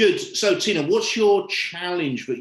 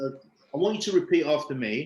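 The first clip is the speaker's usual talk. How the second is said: normal talking voice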